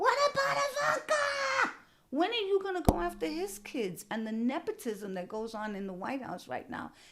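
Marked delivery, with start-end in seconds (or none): 0.0-4.0 very high, loud, furious angry scream. Recalling the debates, the speaker reenacts yelling at the tv: retelling screaming at the tv. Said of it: "I'm screaming at the TV".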